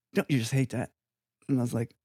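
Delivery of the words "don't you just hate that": put-on rough, approximate English accent. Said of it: "with the English accent, which I don't do very well".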